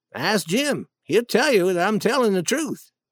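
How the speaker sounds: ordinary delivery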